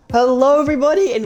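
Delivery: loud voice crack. Host opening another episode of Killer Frequency, voice cracking. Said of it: "voice crack".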